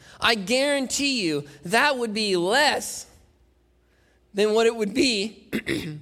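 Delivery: breaking, cracking voice mid-line. Explaining the cost of Abraham's offering, speaker talks with a cracking voice. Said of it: "voice crack".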